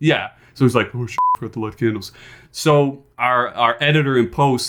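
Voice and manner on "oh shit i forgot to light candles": low, soft muttering under the breath. Retelling a pastor's remark on a live broadcast: imitating someone muttering softly. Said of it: "he said it, like, softly".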